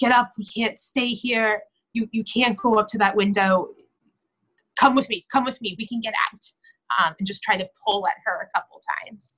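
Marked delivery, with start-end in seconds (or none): 0.0-6.4 begging, coaxing, earnest pleading tone. Acting out a character trying to wake someone: pleading. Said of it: "plead with her".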